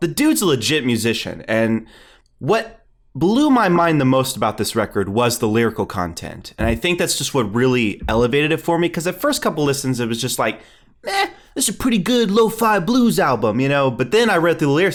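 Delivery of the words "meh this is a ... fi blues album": put-on high, swooping tough-guy gangster voice. Retelling own first reaction to an album, imitating a mobster voice. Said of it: "like a mobster".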